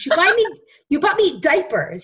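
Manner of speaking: play-acted, high-pitched yelling. Telling a story, the speaker quotes what they said to their mother on the phone; retelling a yell. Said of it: "I'm like yelling at her".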